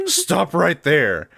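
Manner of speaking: hard, high-pitched yelling. Narrating a market scene, a character yells out: yelling out. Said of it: "Valerian yells out".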